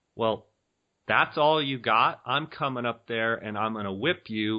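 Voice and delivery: ordinary talk, nothing marked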